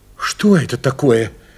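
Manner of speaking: worried, anxious voice. A narrator voices the mother asking about the strange object the father brought: worried. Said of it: "с беспокойством спросила мать".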